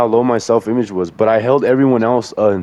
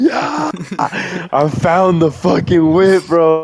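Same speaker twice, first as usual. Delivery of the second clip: put-on shout, higher pitched; 7 semitones higher than usual. Retelling finding the car downtown at four in the morning: retelling his own screaming. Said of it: "I was just screaming".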